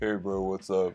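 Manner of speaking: put-on deep bro voice with slight gravel. Recalling how they talked in high school, in a put-on bro voice. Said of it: "a real bro voice I put on, where like you have a little gravel to it".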